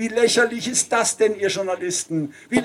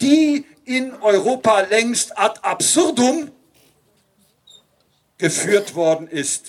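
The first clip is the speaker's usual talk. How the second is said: deliberate long pause following worden ist. Quoting a speaker and copying his pause: long pause after worden ist. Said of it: "wenn ich jetzt die Pause gemacht habe, dann deshalb, weil er sie auch gemacht hat an der Stelle".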